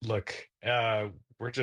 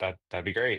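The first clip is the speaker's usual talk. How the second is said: ordinary talk, nothing marked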